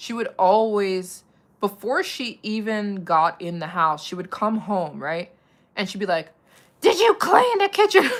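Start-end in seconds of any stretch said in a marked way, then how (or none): 6.8-8.1 very high pitched, very loud shrill yell. Retelling how a mother came home demanding a clean house: imitating mom yelling. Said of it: "my mom would start yelling at us".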